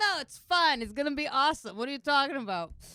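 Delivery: carefree, excited, breezy, high and loud.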